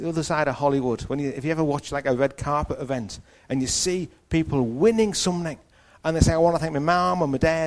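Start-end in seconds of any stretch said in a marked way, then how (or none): 6.3-7.7 put-on American accent. Imitating people winning something at a red carpet event, put-on American accent. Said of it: "That's my American accent".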